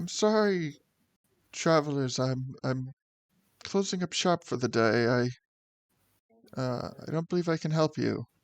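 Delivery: tremulous, hesitant, shaky voice. As the game master, voice a woman calling out to the approaching party, shaky and uncertain. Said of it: "her voice appears to be a little shaky and uncertain".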